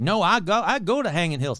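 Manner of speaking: imitated, put-on Southern accent. Voicing locals who insist the ghost story is true, in a put-on Southern accent. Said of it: "I'm giving them Southern accent".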